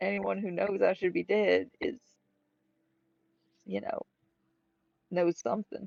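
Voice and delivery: very quiet. A player's character pulls the group aside to speak, very quietly. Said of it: "I'm saying this very, very quietly to the group".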